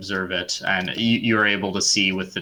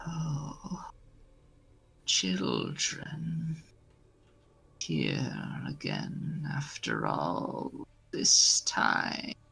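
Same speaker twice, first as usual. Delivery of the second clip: thin, faint, raspy whispered voice; 6 semitones higher, 8 dB quieter than usual. A shifting figure stirring from the shadow greets the children in a faint rasping voice. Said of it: "you hear a faint rasping voice say".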